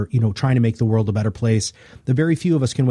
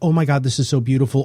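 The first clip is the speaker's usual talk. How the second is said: put-on happy, tearful crying; 2 semitones higher than usual. Retelling how listeners reacted to a podcast: imitating happy crying. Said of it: "happy crying".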